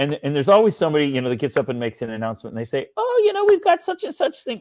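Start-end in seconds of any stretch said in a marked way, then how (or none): 3.0-4.6 very high-pitched put-on woman's voice. Speaker mocks someone making an announcement at meetings, imitating a woman's voice. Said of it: "I don't mean to use a woman's voice".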